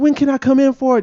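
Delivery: very high, hopeful little voice. Imitating job applicants answering a call about an interview: imitating a hopeful applicant. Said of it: "the little hopefulness in your voice".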